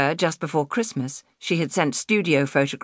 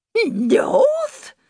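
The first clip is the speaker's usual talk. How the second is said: very high-pitched, spluttering, incredulous disbelief; 4 dB louder than usual. Narrator reads the landlady's reply to a pleading woman, spluttered. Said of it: "the landlady spluttered".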